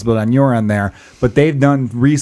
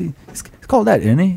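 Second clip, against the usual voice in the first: put-on British accent; 5 semitones higher than usual. Imitating how someone said a name, in an imitated British accent. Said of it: "he said with that British accent where it sounds like they say, like, innie".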